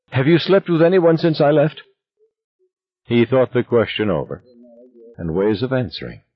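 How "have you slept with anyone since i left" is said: sudden pitched-up blurt, words all at once. After a pause between them, she suddenly puts a question to him, blurted out. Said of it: "she blurted into it".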